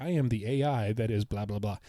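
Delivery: normal talking voice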